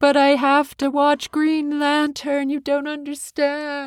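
put-on high, whiny meltdown voice like an overtired child.

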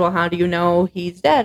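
ordinary talk, nothing marked

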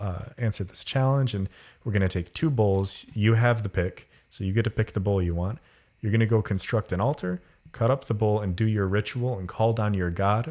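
ordinary talk

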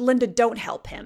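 mock scornful, disdainful tone. Retelling what the owner said to Linda, mimicking his disdain. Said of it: "looking at me and him with disdain and he says".

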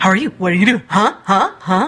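fast, hyper, excitable, bouncy dog voice. Voicing a pet dog as imagined talking: hyper bouncy dog voice. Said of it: "just very hyper bouncy".

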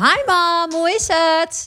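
relaxed, homey drawn-out voice. Showing the voice used when phoning mom, a familiar voice. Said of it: "Zet ik mijn familiaire stem op".

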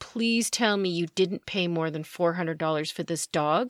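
ordinary delivery

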